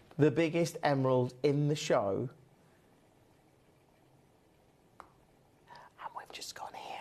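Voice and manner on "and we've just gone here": hushed whisper under the breath. Presenting the biggest emerald in the show to viewers, whispering. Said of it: "I don't know why I'm whispering".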